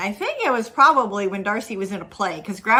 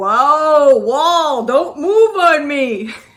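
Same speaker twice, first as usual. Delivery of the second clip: very slow, big, loud, booming, drawn-out voice; 6 semitones higher, 7 dB louder than usual. Retelling hearing someone in the basement call out, in a big, loud voice. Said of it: "He's got this big, loud voice".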